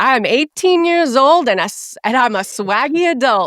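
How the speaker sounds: high-pitched, full-throated shout. Quoting him as he yells to the crew in his recording bungalow, retelling a yell. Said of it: "he yells".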